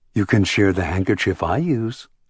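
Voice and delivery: ordinary talk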